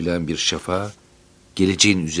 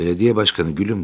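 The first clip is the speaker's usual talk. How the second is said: ordinary delivery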